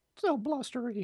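very high, hushed, soft cartoon voice. Right after hearing Winnie the Pooh says it, doing Winnie the Pooh's voice. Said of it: "That was spot on".

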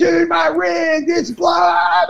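very shrill, very slow, raspy, drawn-out panicked scream. Retelling his guitar rig failing during a show, re-enacting screaming at someone. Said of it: "I'm screaming at Tex and I'm like".

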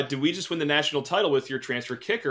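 plain

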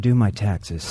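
put-on, mock-sexy, sultry voice. Taking a turn saying an unsexy line in a mock-sexy voice. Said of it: "Things said in a sexy voice".

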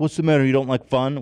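shouted voice. Retelling a dad's story of a crowd booing someone: imitating people shouting. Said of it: "Four people were shouting at her".

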